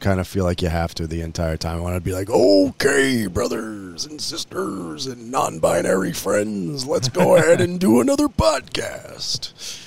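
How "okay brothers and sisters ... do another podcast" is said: high, swooping, swinging pitch, every word drawn out. Joking about opening another podcast episode: Macho Man voice. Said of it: "using the Macho Man voice".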